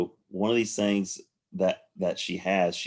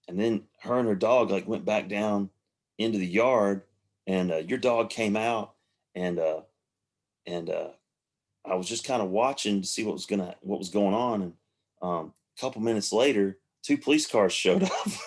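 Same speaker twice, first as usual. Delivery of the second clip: usual speaking voice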